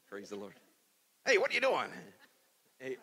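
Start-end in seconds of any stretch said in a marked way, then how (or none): 1.3-3.0 rattled off quickly with big swooping pitch. Telling a story about a donkey and a man, the donkey speaks: Donkey from Shrek voice. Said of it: "the donkey should speak like the donkey from Shrek".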